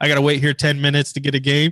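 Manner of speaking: ordinary talk, nothing marked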